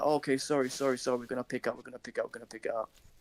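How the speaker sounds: put-on scared, apologetic tone. Retelling how the guys apologized after being confronted: imitating scared apologizing. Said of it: "They all fucking shit themselves".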